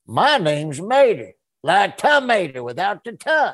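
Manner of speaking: loud, high sing-song with wide pitch swings. Retelling his very first recording line as Mater: Mater voice. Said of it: "And I remember going".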